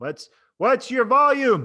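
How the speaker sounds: loud, slow, high call. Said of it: "variety in your volume".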